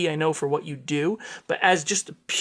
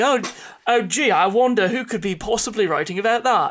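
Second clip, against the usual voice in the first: teasing, playful put-on character voice; 5 semitones higher than usual. Acting out how Mark would react to a cue: imitating Mark. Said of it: "for Mark to be like".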